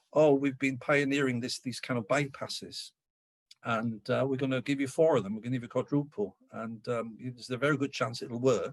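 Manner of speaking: ordinary talk, nothing marked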